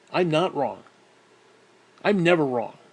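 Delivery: ordinary talk, nothing marked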